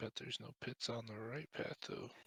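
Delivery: muttering under breath. Speaking in character during a game scene: muttered under breath. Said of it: "just under my breath".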